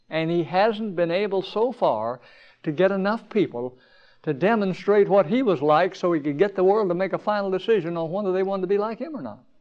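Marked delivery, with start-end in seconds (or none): 7.9-9.3 rushed, overly fast, hurried speech. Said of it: "am I talking too fast or too strong".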